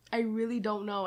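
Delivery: plain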